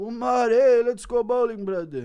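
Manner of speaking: very high, loud put-on voice. Acting out Khabib asking cousin Umar to go bowling, Khabib impression. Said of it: "Khabib asking cousin Umar if he wants to go bowling".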